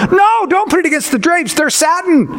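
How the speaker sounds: high-pitched, heated, shrill yelling that escalates. Retelling how the homeowner yelled even louder about the drapes: imitating louder yelling. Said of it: "He even got louder".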